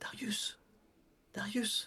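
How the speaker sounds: soft, unvoiced, murmured whisper. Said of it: "Ben, je murmure".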